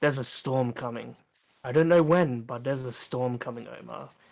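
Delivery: confidential, hushed murmur under the breath. Leaning in to warn a character while leading him to customers: said under the breath. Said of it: "lean in and say under my breath".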